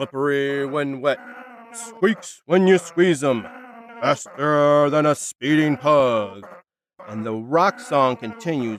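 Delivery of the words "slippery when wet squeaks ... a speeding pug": bursting announcer call, higher. Voicing an announcer who erupts over rock music: erupting announcer voice. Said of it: "you hear an announcer erupt".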